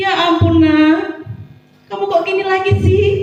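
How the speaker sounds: mock pitiful, wheedling, whining reproachful tone. Acting out a teacher whose pupil made a mistake, put-on pitiful whining tone. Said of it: "dengan nada melas".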